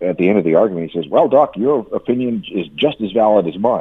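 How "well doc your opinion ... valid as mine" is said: ordinary talk, nothing marked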